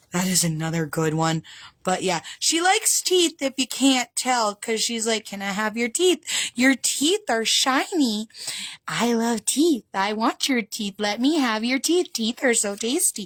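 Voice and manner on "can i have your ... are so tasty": eerie, creepy fae creature voice. Voicing a drawn bone fairy character: creepy bone fairy voice.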